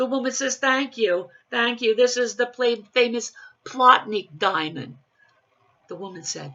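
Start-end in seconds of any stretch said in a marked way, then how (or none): 0.6-5.0 put-on loud, raised New Jersey accent, joke-teller style. Telling a joke, voicing a woman on an airplane: Jersey accent. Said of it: "some jokes are just made to be told with a Jersey accent".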